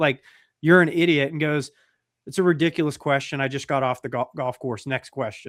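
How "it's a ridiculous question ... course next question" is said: normal talking voice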